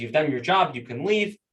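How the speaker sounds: plain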